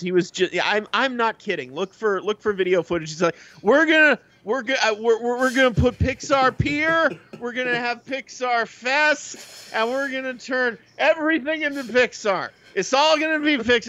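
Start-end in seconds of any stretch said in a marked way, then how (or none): 3.6-13.9 mock drunken slur, much higher, slower. Retelling a theme park speech by a drunk John Lasseter: imitating John Lasseter slurring drunk. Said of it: "He was like slurring his words".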